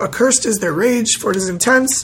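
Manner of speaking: normal talking voice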